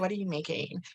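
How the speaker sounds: soft, put-on California girl voice. Retelling a woman approaching her booth to ask what she's making, california girl voice. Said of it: "I always default to like a California girl".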